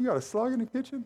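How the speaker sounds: high-pitched, baffled tone.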